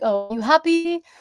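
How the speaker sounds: stiff, stilted, awkward, slightly high fatherly tone. Speaker imitating how Chinese dads talk to their kids, imitating a stilted dad tone. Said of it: "in that exact tone".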